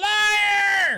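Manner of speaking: sudden, high shouted word at full volume.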